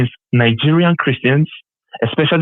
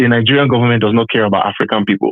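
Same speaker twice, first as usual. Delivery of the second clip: ordinary talk, nothing marked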